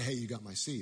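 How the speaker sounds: normal talking voice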